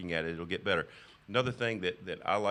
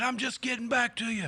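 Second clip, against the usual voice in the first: high, shrill, screaming mock yell; 4 dB louder than usual. Retelling screaming back at a woman on the phone: imitating his own screaming. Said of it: "I screamed right back at her".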